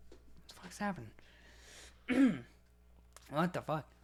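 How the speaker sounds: high outburst with voice giving out. Mid-podcast, the speaker suddenly starts losing their voice: voice giving out. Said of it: "I'm like losing my voice all of a sudden".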